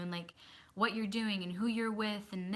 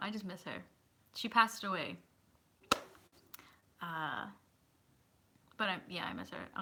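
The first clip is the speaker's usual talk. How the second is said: voice right on the edge of crying; 2 semitones lower, 4 dB quieter than usual. Talking about someone who passed away, holding back tears. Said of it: "I don't wanna cry right now".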